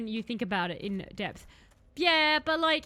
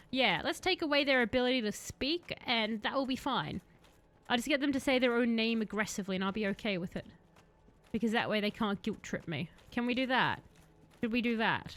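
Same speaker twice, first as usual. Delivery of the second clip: plain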